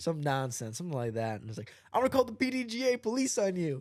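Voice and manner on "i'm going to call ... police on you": put-on high-pitched scolding yell, hollering. Retelling being yelled at in a parking lot: imitating Nico yelling. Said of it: "Nico's yelling at us".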